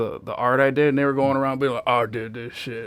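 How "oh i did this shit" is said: smug, show-off, boastful bragging tone. Recalling people who took the speaker's traced art, imitating them bragging. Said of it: "all like bragging about it".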